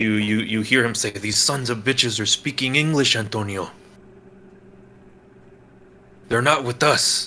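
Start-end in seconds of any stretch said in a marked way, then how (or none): 1.1-7.3 mock whisper through gritted teeth. An older man pulls a younger man in by the arm, whispering through his teeth. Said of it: "whispers through his teeth at him".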